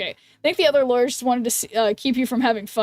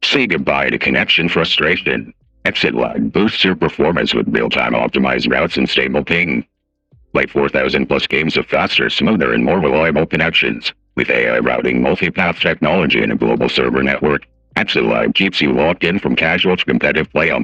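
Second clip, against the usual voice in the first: silly, put-on ad voice, very low, deep and loud; 5 dB louder than usual. Reading a sponsor ad aloud to the audience, in a funny voice. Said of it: "read you guys a an ad in a funny voice".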